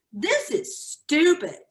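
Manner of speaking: put-on teenage-girl voice. Quoting teenage daughters who hated the quizzes, mimicking a teenage voice. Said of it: "in that teenage voice".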